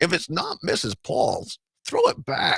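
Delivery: put-on rough, gravelly old-style commercial voice. Quoting the tagline of a fish sticks ad, in a gravelly Mrs. Paul's ad voice. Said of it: "it was this gravelly".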